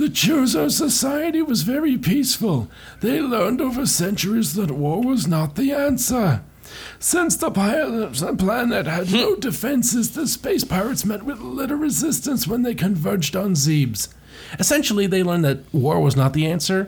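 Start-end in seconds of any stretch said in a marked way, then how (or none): 0.0-14.1 put-on wheezing, pitched-up old man storyteller voice. Voicing a story's narration about the chozo, in a wheezy old man voice. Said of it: "Fine, I'll do like wheezy old man".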